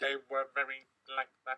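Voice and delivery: machine-like sci-fi robot voice. Showing on the radio what the Cybermen sounded like, in a Cyberman voice. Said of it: "I'm doing a Cyberman voice".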